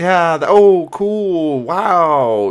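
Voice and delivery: mock awkward, very slow, polite-sounding filler. Imitating people listening to extravagant lies: imitating an awkward polite reaction. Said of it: "that awkward".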